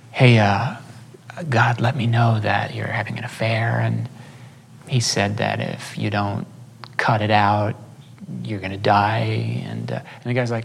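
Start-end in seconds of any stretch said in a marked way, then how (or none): 0.2-9.7 acted-out whisper, lower. Speaker retells a man going over to a stranger beside a woman: retold whisper. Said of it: "he whispers".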